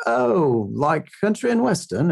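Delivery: clumsy, bad put-on English cabbie accent. Retelling what a cabbie in england said, in a bad english accent. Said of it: "that was a bad English accent".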